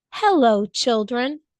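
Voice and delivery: sweet, sweetly spoken voice. Reading a story: someone greets the children after footsteps in the hall, sweet voice. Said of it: "someone said in a sweet voice".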